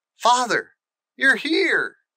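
exclaiming, high, eager cry. Reading a story aloud, Colin dashes out and speaks to his father: cried out. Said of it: "cried Colin".

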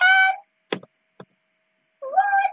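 very high, squeaky mouse voice.

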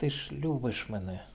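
indistinct, muttered, mumbling. Narrator reading Nadiika with her face pressed to Stepan's knees, muttered. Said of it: "пробурмотіла вона".

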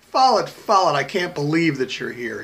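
loud, swooping, thrilled excited shout. A woman runs to meet Follett as he gets out, shouted excitedly. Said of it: "shouted the woman, almost jumping up and down in her excitement".

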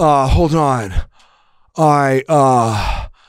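put-on bewildered, stammering voice. Playing Cage ordering at McDonald's in a skit: Nicolas Cage impression. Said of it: "Here's Cage walking into McDonald's".

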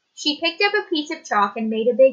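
plain

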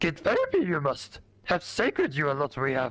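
swooping sing-song pitch, word order flipped. While playing a game, the speaker jokes after a lightsaber cut, in Yoda voice. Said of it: "In the Yoda voice".

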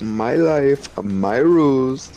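bad put-on Indian accent. Quoting someone from an indian movie they watched, in a shitty indian accent. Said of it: "that was a shitty Indian accent".

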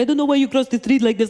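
fast, terrible put-on Middle Eastern accent. Retelling what a cab driver said to a woman on the floor, terrible Middle Eastern accent. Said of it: "I do a terrible Middle Eastern impression".

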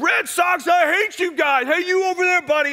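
put-on very high, shrill, loud, half-drunk heckling holler. Retelling a half-drunk fan yelling at Red Sox fans: imitating a half-drunk man yelling. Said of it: "he's yelling at Red Sox fans".

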